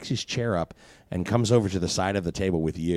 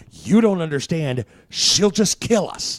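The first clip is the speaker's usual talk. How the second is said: very high, loud, frantic, panicked pleading; 9 semitones higher, 6 dB louder than usual. Voicing a character who is getting loud in a restaurant: loud panicked pleading. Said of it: "He is getting loud".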